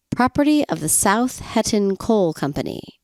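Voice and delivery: ordinary talk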